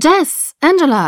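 loud high-pitched shouting. First-person narrator calls out to Jess and Angela, shouting. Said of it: "schrie ich und winkte".

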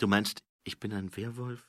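ordinary delivery

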